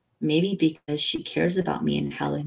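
ordinary delivery

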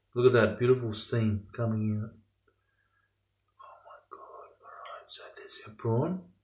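hushed whisper. Cooking on camera and showing the prawn to viewers, whispering. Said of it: "I'm whispering".

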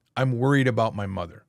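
ordinary talk, nothing marked

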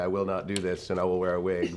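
ordinary talk

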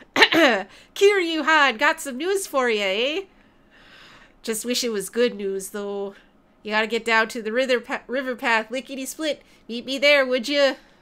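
outrageous, over-the-top, exaggerated Canadian accent. Reading a game character's message to kiryu, in an outrageous canadian accent. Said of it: "give him the outrageous Canadian accent".

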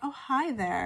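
alluring, seductive, come-hither voice. Showing the kind of voice someone could use, a seductive voice. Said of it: "you could kind of maybe even do this kind of voice like".

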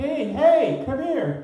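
screaming, stretched-out high call. Retelling a dude in a wheelchair yelling from three blocks away: imitating someone screaming. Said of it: "he was screaming".

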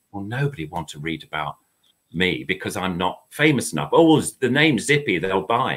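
ordinary talk

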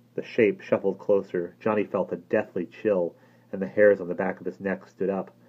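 usual speaking voice

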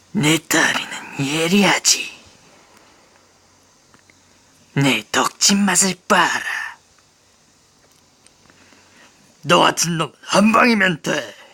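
put-on cartoon monster character voice. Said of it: "세븐나이츠 캐릭터 성대모사".

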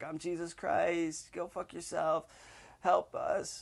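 ranting outcry, high and slow, words stretched out. Retelling standing on a table when waitresses ignored them: retelling a scream. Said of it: "start screaming".

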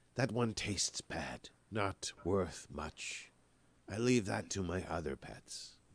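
scornful, dismissive hissing creature voice. Voicing a creature behind the party who hisses dismissively: dismissive hissing voice. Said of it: "just sort of hisses a little bit, um, dismissively".

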